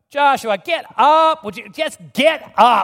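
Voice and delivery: acted, very loud, fed-up, drawn-out exasperated voice. Retelling the Lord telling the man on his face to get up, mock-annoyed. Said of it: "I think there was tone".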